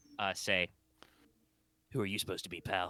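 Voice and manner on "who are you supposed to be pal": obviously put-on, low, hushed disguised voice. Someone presses a suppressed gun into a back and asks a question, low disguised voice. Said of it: "you just hear a low voice, somebody very obviously trying to like disguise their voice".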